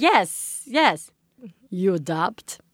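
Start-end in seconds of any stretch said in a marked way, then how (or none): 1.7-2.6 horrible put-on Eastern European accent. Retelling what a woman asked the speaker, bad Eastern European accent. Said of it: "I'm gonna do a horrible accent. She's like Eastern European".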